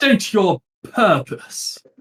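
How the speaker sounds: lofty, noble-sounding voice. Running a game, the narrator voices someone behind a door challenging visitors: noble voice. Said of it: "calls out in a in a noble voice".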